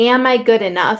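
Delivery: ordinary delivery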